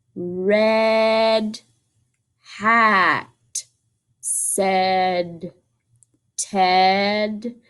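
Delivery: very slow, silly sloth voice, one word stretched long. Reading a line from a book aloud, slow silly Flash voice. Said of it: "so that one's slow, it's silly".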